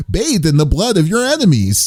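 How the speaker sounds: chipper announcer delivery. Joking about the announcer saying random phrases, the speaker mimics his uppity voice. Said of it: "can you imagine him saying random phrases".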